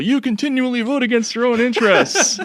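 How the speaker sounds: very high shrill shout. Retelling how the wrestler acts in the ring: imitating a wrestler shouting. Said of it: "He just shouts at people".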